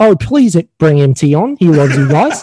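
casual fake put-on Australian accent. Writing a pretend recommendation letter for a podcast: put-on Australian accent. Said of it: "I'll put my Australian accent".

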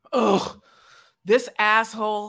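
loud, irritated, fed-up exclamation in a woman's voice. Retelling how a woman reacts to a knock at the door: imitating an annoyed woman. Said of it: "She is annoyed".

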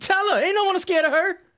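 mocking, challenging tone.

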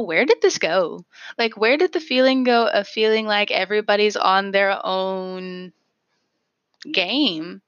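plain

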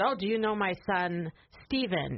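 put-on heavy Greek accent, laid on throughout. Retelling a restaurant owner's remark to his customers: heavy greek accent. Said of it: "in a heavy Greek accent".

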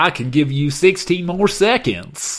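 put-on loud high Southern accent. Prompted by a partner to do a Lee voice: Southern accent as Lee. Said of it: "That's what we all sound like in the South".

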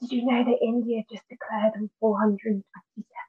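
acted whispering. Pretending to chat by the fire pit, imitating a whisper. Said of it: "then just whisper".

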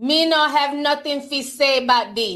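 horrible, bad, fake put-on Jamaican accent. Speaker reacting to a reggae Grammy win as their Jamaican self, in a bad Jamaican accent. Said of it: "I know my Jamaican accent is horrible".

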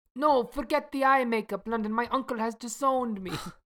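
put-on Italian accent, pitched very high. In a scene, Luca answers London: Italian accent. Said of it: "I am so sorry for my Italian accent that is about to happen".

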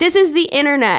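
play-acted, full-on yell, loud and high. Reading out a line written in capital letters: yelling. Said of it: "that's why I'm yelling".

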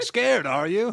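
loud, high, defiant, proud bellowed taunting tone.

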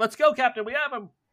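high, carrying yell. Voicing a captain pulling away, yelling to the player: NPC yelling for the captain. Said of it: "he's yelling for you".

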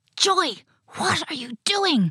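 shouted in a loud whisper. Narrator reads Cara calling out to Joy, shouted in a whisper. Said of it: "Shouted Cara in a whisper".

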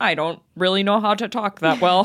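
mechanical robot voice. Mocking a broadcaster in the Monday Night Football booth: robotic Jason Witten impression. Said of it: "being a robot".

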